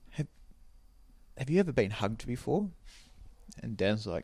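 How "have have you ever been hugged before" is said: soft, hushed half-whisper. Retelling a joke, voicing a girl who leans over: imitating a girl half-whispering. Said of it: "leans over and whispers and goes".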